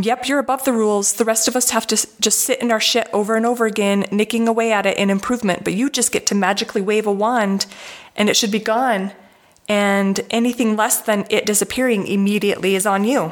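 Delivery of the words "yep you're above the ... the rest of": plain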